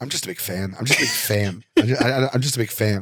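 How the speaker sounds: rote, looping repetition, stumbling over the words. Retelling being confronted by an angry man, answering him: imitating Rain Man. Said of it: "I turned into Rain Man".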